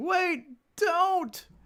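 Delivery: high-pitched, alarmed cartoon character yelp.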